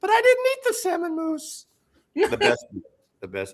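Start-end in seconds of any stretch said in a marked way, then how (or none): 0.0-1.7 very high, small, tiny piping voice. Retelling a favorite scene's final line, speak in a tiny little voice. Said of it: "you hear this little voice".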